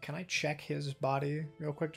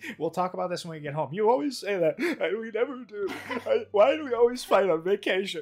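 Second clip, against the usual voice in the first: fake crying in character voice; 6 semitones higher, 7 dB louder than usual. Staging a fake quarrel in character as a deception: fake crying in character. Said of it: "as part of my deception, I'm just crying now".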